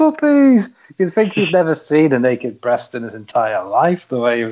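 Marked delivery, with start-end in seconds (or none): 0.0-0.7 put-on screaming commentator voice, higher and louder. Retelling a commentator's outburst, imitating Michael Cole screaming. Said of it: "Michael Cole just starts screaming at the top of his voice".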